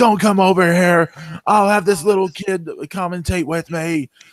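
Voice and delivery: loud, high-pitched yelling. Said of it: "like, yelling at Vampiro".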